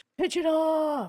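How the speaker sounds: put-on shout. Retelling yelling into a microphone during a game queue: imitating own yelling. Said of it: "I'm sitting there yelling, like, into my microphone".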